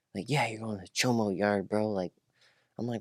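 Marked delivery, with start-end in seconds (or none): 0.2-1.8 put-on mocking laughter, quieter. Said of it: "they're all laughing at me like".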